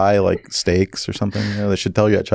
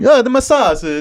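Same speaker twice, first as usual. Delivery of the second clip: put-on Italian accent, much higher pitch. Asked to do it in Italian, retelling Roberto's words, imitating Roberto's Italian accent. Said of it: "How do you do it in Italian?".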